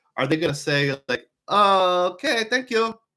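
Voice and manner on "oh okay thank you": put-on Swedish accent, high, slow and drawn out. Imagining a hotel front desk's reply to an Expedia gold member, Swedish accent. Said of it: "that's my Swedish accent".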